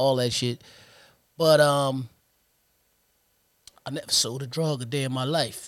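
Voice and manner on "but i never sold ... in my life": voice breaking and cracking mid-line. Recalling people he lost, speaking with his voice cracking. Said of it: "You heard how my voice cracked".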